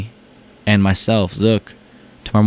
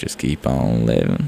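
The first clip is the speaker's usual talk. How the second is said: very slow, drawn-out put-on vocal fry; 9 semitones lower, 4 dB quieter than usual. Trying the line one more time, imitating a man's vocal fry. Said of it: "I thought he has that vocal fry".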